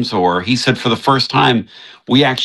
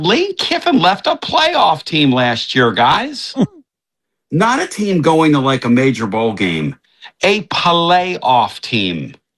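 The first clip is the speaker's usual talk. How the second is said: put-on Yankee accent, pitched up; 5 semitones higher than usual. Talking to the guys about Lane Kiffin leaving his team, in your best Yankee accent. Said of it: "In my best Yankee".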